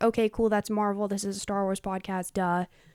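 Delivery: ordinary talk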